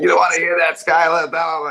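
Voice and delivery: loud, theatrical delivery like an acting exercise. Retelling acting students doing a Good Will Hunting scene impression. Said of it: "started doing the Good Will Hunting scenes".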